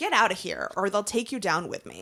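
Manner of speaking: put-on beaten-down, defeated voice with all hope gone. Recapping a scene, imitate Catra in a defeated, hopeless voice. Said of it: "in this really defeated, hopeless voice".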